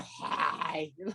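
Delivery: low, soft mock manly voice. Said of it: "That fucking manly China voice".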